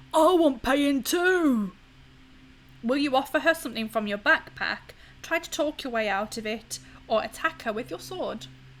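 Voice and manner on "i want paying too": loud, husky, hoarse voice, very slow. Narrating a game, a woman grabs you by the throat: husky voice. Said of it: "says in a husky voice".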